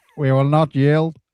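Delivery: loud put-on Northern Irish accent. Joking around on a live podcast: Northern Irish accent. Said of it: "That's a very good Northern Irish accent".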